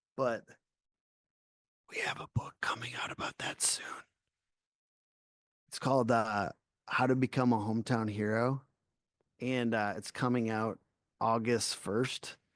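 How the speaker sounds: put-on whisper. Announcing an upcoming book no one is supposed to know about: mock whisper. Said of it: "just gonna whisper this because no one's supposed to know yet".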